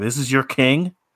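acted, gloating, contemptuous, scornful jeering tone. Recounting a film scene, the speaker acts out Killmonger yelling and taunting. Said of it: "he's yelling and taunting".

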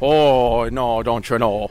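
put-on Irish accent. Asked on the spot to do the Irish accent, speaker tries an Irish accent. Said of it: "Can you do the Irish accent?".

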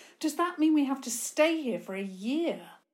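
nervous, near panic. Eva asks Toby, the edge of panic in her voice. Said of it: "the edge of panic in her voice".

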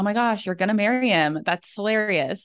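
put-on sarcastic tone. Retelling what a roommate's friend said, imitating a sarcastic remark.

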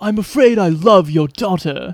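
bad, dreadful English accent. Imitating a movie line: Keanu Reeves bad English accent. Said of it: "the Keanu English accent is just a".

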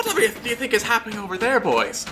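put-on high, fast, distracted old man voice. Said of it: "and he's like".

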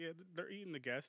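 mock-casual offhand tone. Speaker retells how another man answered him, imitating a nonchalant reply. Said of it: "the way he said it was like, this shit happens every day".

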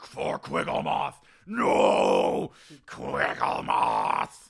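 snarling werewolf shout. Voicing a werewolf fighting outside: werewolf shouting while fighting. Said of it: "You can hear the werewolf scratching and fighting".

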